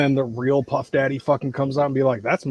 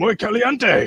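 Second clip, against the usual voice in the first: high-pitched put-on creature voice; 8 semitones higher than usual. Retelling a trailer where Venom eats hot wings: imitating Venom. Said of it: "he just goes".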